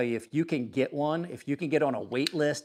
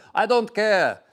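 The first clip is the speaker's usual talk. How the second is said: put-on thick Russian accent, laid on heavy, raised and high; 7 semitones higher, 7 dB louder than usual. Speaker quoting a father at a knife show, heavy russian accent. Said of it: "With the heavy Russian accent".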